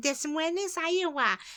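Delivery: small, cute, high-pitched put-on voice. Retelling how a mother drilled state capitals, imitating her little voice. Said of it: "She did this little, like, voice like that".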